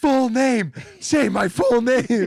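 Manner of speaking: play-acted high, loud scream, slow and drawn out. Retelling how they screamed at the host who introduced them: imitating own screaming. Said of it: "I started screaming at him".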